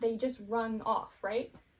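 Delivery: plain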